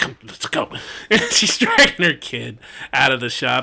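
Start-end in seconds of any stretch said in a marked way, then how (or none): 0.0-0.7 hushed, hurried whisper. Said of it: "she's like".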